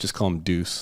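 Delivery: ordinary delivery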